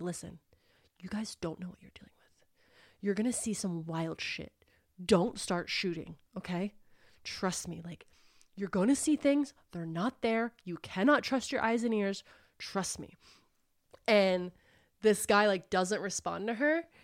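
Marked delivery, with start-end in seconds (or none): 0.0-13.2 hushed, close, whisper-talking delivery. Retelling a character warning a uniformed guard: imitating a whisper. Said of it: "kinda whisper talking to him".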